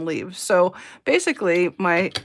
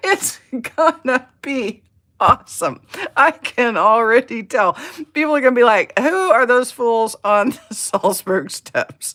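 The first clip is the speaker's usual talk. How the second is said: talking through laughter, higher and louder; 4 semitones higher, 5 dB louder than usual. Imagining teaching scales on the salzburg steps, laughing while talking. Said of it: "I'm cracking myself up".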